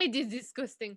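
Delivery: put-on French accent. Joining in the imitation of the Cupcake Wars judge: Florian French accent. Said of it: "we always used to imitate him".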